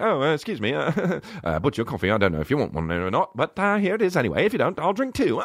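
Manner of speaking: halting, hesitant, charming delivery. Acting out charming a woman over coffee: nineties Hugh Grant style. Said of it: "nineties Hugh Grant style type".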